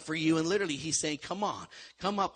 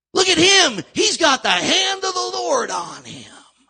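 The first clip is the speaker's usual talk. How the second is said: very loud, very high ringside announcer hype shout; 13 semitones higher, 13 dB louder than usual. A speaker giving a slide talk breaks into a World Wrestling Federation voice. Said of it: "that was my World Wrestling Federation voice".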